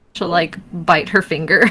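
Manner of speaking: usual speaking voice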